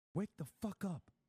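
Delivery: high, furious, angry whisper-shout. Talking to chat, keeping quiet so as not to wake the neighbor: whisper-screaming. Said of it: "I have to whisper scream".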